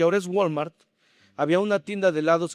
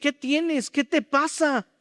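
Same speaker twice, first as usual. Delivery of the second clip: high, startled, frightened and alarmed; 9 semitones higher than usual. Retelling how his startled wife asked what was wrong: imitating a frightened wife. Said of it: "ella se asusta y me dice".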